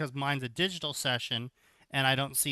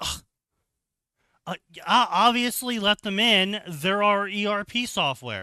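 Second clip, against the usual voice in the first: dismissive, raised, pitched-up scoff with stumbling start; 6 semitones higher, 6 dB louder than usual. Retelling a client's reply on the phone: imitating someone scoffing. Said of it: "she scoffs at me, and she's like".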